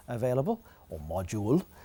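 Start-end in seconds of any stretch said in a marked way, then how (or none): 1.0-1.6 very bad put-on French accent on module. Saying a word the way the French would, in a bad French accent. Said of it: "It's a very bad French accent".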